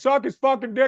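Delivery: high-pitched mock yell, heckling tone.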